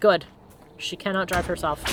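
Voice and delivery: ordinary talk, nothing marked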